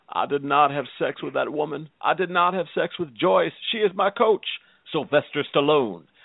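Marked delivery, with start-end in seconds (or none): 0.2-4.5 put-on Southern politician voice, quieter. Endorsing a coach as a celebrity: Bill Clinton impression. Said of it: "President Bill Clinton".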